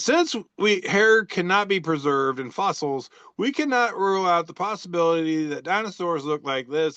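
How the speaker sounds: ordinary talk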